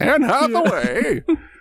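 high, hammed-up silly voice for laughs. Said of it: "so that's some silly voices".

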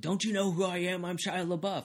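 loud, high-pitched hollering yell. Retelling a celebrity being thrown out of a bar, retelling a yell. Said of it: "he's yelling".

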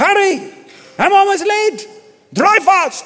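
very high, slow, put-on Irish accent. Retelling what a man told a taxi driver, in a put-on Irish accent. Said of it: "It's the best Irish I can do".

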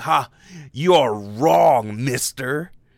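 needling, passive-aggressive gotcha tone. Speaker retelling how a stranger heard their correction, mock passive-aggressive. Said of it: "in like this passive aggressive way where I'm like".

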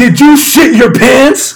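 very loud, very high, shrill shriek. Retelling his mom at the door, with neighbors right there: retelling a shout. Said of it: "and she shouts".

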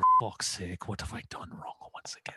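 breathy, hushed, breathed-out whisper. Imitating a manager reacting to a save: imitating Brendan Rodgers. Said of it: "he would have pulled out his notepad".

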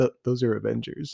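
soft, hushed stage whisper under the breath. Retelling a film scene where an officer tells another: imitating an officer half-whispering. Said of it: "sort of whispers to him".

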